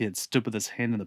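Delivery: plain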